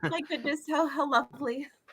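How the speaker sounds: high, touched, teary voice on the verge of crying. Voicing a moved character with a tear in her eye: teary-eyed, moved. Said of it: "Daffy would just have a tear in her eye".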